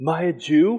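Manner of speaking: mock sarcastic put-on voice. Reading a line from the trial aloud: Pilate, put-on sarcasm. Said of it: "there's sarcasm behind that".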